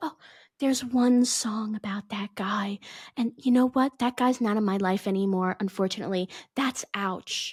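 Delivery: put-on coy voice. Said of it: "she pretends to be coy".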